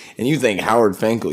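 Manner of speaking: ordinary talk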